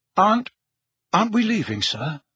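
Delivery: anxious, worried, concerned tone. Harry asks Dumbledore a question, anxiously. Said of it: "Harry asked anxiously".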